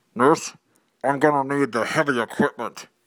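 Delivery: mock voice as through a mask. Telling a joke, the dentist speaks to the nurse through the mask, imitating muffled voice through mask. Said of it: "through the mask".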